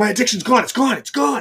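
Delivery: high, loud, freaked-out rush. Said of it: "he's freaking out because he's like".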